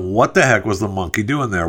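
ordinary talk, nothing marked

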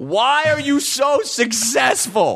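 impassioned yell, high-pitched and slow.

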